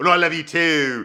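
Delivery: put-on British accent. Retelling a scene from a British show, put-on British accent. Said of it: "because it's a British show".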